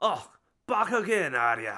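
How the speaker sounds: put-on voice with Scottish accent. Voicing Kaiden in the Berkeley Prison governor's office, Scottish accent. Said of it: "his Scottish accent".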